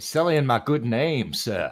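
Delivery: courtly, genteel Southern gentleman voice and accent. Protesting someone telling lies about them, in a Southern gentleman voice. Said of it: "good Southern gentleman voice".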